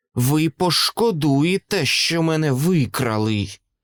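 venomous, poisonous hissing tone. The captured creature speaks to its captors, venomous hiss. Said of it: "отруйно прошипіла істота".

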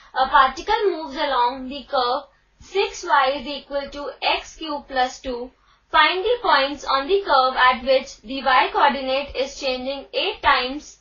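ordinary talk

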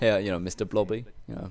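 ordinary delivery

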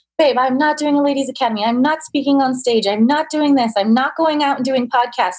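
acted high scream. Retelling refusing to a partner: retelling own past screaming. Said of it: "I'm screaming and saying".

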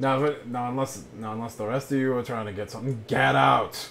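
grumpy grumbling under breath. Voicing a grumpy shopkeeper telling the party to leave: grumbling under his breath. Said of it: "he grumbles under his breath again".

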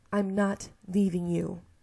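sharp, snapping, curt tone. Reading a story aloud, refusing to leave a captive friend: snapping. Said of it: "I snap at him".

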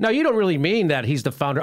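ordinary talk

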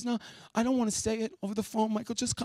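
tearful crying voice. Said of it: "she's crying when I pick up the phone".

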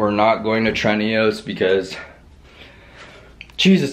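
winded, out of breath. Talking about the day's chest workout and benching, out of breath. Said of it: "I'm out of breath".

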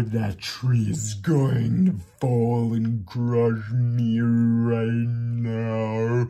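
said very slowly, drawn out. Demonstrating how to repeat an anxious thought out loud until it sounds silly, very slow.

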